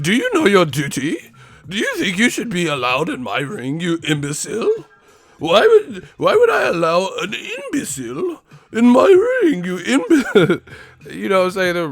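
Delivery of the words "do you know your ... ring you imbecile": snobbish, snooty, swooping posh voice. Mocking how snooty rich people talk, in a snooty rich person voice. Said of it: "The snooty ass rich people be talking like that".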